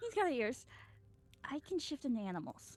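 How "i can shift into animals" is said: voiced, secretive stage whisper. Secretly telling a companion about shapeshifting while another character listens: half-whispering. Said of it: "closer to whisper this".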